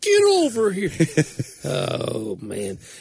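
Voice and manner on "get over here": high, barking voice. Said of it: "Just say".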